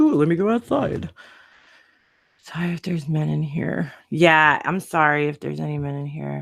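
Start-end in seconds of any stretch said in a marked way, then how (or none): 0.0-1.1 high-pitched put-on dog voice. Retelling what the dog wants in the pouring rain: voicing the dog. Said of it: "now he's like".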